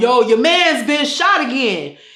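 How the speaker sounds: put-on loud New York accent. Retelling what a man said when he called with really bad news, New York accent. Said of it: "in his New York tone".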